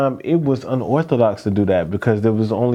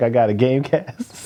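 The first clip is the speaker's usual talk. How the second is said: normal talking voice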